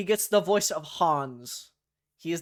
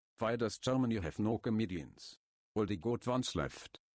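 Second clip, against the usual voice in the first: put-on German accent, lower and quieter; 7 semitones lower, 6 dB quieter than usual. Telling a joke in the Hans voice: German-esque Hans voice. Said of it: "Say goodbye to German [name]".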